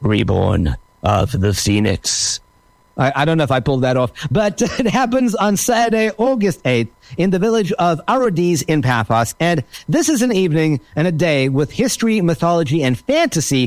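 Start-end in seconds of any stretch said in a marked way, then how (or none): 0.0-2.4 epic, dramatic, very low gravelly voice. Saying the event's name a second time, in a dramatic gravelly voice. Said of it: "kind of in a dramatic, gravelly voice".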